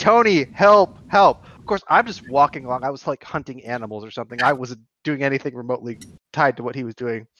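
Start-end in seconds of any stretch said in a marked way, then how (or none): 0.0-1.4 mock screamed, high, loud voice. Telling how Walt, alone on a boat, got attacked, retelling Walt screaming. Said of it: "He's like screaming".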